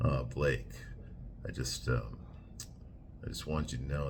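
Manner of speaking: soft, breathy, seductive whisper. Imitating how Justin Baldoni talks to Blake, Justin Baldoni seductive voice. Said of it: "Like that. He'll do the seductive voice".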